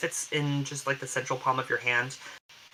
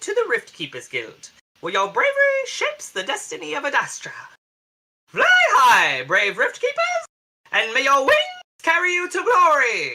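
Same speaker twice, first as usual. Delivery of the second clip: very high, swooping, squawky parrot voice; 7 dB louder than usual. Retelling a man's speech to the rift keepers guild, sounding like a parrot. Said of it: "he really sounds like a parrot".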